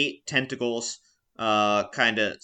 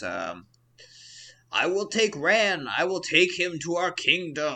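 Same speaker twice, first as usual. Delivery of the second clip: weird, high, slow, gurgling sea-creature yell; 6 semitones higher than usual. Game narrator voicing Prilla yelling during a fight, Prilla's gurgly octopus yell. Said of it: "yells in a weird, gurgly octopus voice".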